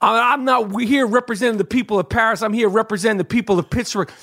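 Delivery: normal talking voice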